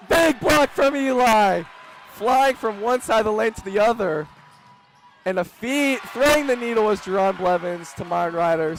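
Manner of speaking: shrill, very high, very loud, excited screaming. Game announcer calling a big block and a pass: excited screaming. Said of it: "Sorry for screaming into the mic".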